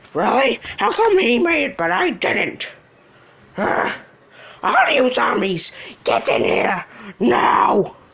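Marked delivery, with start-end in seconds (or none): 3.6-7.9 demonic possessed voice, much slower. A character commands the zombies, in a demonic possessed voice. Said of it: "Why does he sound like he's starting to be possessed by the devil?".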